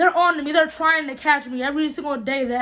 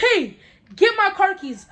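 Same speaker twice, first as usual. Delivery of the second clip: frantic, high, scared voice; 5 semitones higher than usual. Retelling being grabbed, yelling at a friend to get car keys: retelling a yell. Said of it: "I'm yelling".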